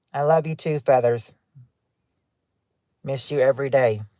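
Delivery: very stuffy-sounding put-on voice. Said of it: "That was very stuffy sounding".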